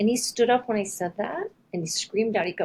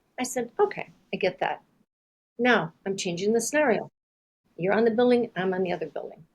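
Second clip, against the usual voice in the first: ordinary talk, nothing marked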